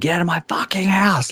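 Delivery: mock high, full-panic scream. Recounting what they yelled at her during an anxiety attack, retelling a scream. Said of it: "like screamed".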